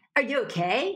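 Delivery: entitled, high-status, demanding tone. Explaining requests versus demands, the speaker demos the wrong version: entitled, demanding. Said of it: "It's not entitled".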